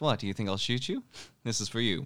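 light, fast, playful teasing jab, acted out. Describing a scene, the speaker acts out a woman holding a gun: imitating playful teasing. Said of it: "She instead just playfully goes like".

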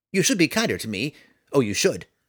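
high, small, squeaky, snapping delivery. Reading a story, the sprite Tifonus answers Roddy in a squeaky voice. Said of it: "The sprite ambled about as best he could, ... Roddy froze at the unexpected squeaky voice".

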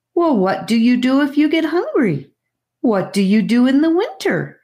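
shocked, squeaky, high, demanding tone. Shocked by what he has just heard, he presses with questions: squeaky demand. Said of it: "he demanded squeakily".

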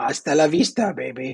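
creepy put-on gremlin-like voice. Quoting a movie line to the others: creepy gremlin-like voice. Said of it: "Is that not the creepiest?".

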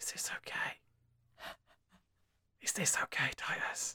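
nervous, very quiet whisper. A role-play player's character turns to a companion and asks, whispering. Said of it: "I'm gonna look at Titus and whisper".

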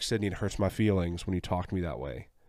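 normal talking voice

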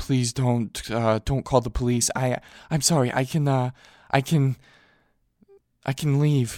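voice catching in throat, stammering and halting. Narrator reads a twenty-nine-year-old answering a calm man, voice caught in throat. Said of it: "voice was caught in his throat again".

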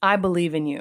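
plain

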